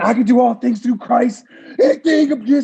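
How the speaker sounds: high, screamed, fervent voice. Retelling someone leading a prayer: imitating someone screaming a prayer. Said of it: "he's screaming".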